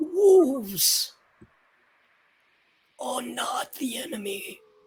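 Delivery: aged tree character voice. The oak replies right after being called uncle, in an oak tree character voice. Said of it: "Yes, extended, for I am an oak, and you are a willow. / for I am an oak".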